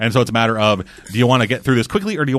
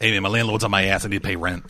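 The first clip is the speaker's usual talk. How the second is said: throaty put-on voice, lower and quieter; 4 semitones lower, 6 dB quieter than usual. Voicing a purchased character asking for more money: put-on character voice, hard on the throat. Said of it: "I gotta stop doing that voice".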